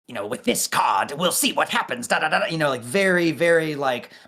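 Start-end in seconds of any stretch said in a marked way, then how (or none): 0.3-2.5 put-on conniving, sly, evil villain voice with British accent. Imitating a favorite Yu-Gi-Oh! villain: Bakura voice. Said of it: "evil British voice, like, conniving".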